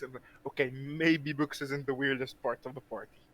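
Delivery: barely audible, very quiet half-whisper. A party member half-whispers an aside to Wings while the ice troll looks on, half-whispering. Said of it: "I'm just gonna whisper to Wings".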